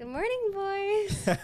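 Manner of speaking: giddy, very high-pitched, loud, shrill. Telling a story, she quotes herself walking in on the boys, retelling a giddy greeting. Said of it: "And I'm just like all giddy".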